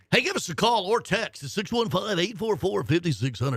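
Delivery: on-air radio station announcer voice. Host giving listeners the call-in and text number, in radio voice. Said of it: "That's my radio voice".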